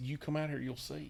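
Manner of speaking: barely audible, very quiet, hushed half-whisper. Retelling a phone call from a man at the barn, retelling a half-whisper. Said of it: "why are you whispering?".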